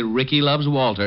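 ordinary delivery, nothing marked

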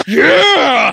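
very loud, high, shrill, stretched-out scream. Retelling screaming in a child's face over a football play: retelling a scream. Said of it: "I just screamed in his face".

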